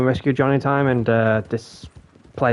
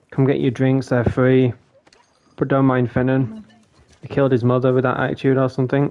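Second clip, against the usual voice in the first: ordinary talk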